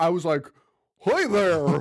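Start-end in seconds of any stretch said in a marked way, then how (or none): 1.0-1.8 put-on, cartoonish southern accent. Recalling how they greeted someone, cartoon voice. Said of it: "It's like a cartoon".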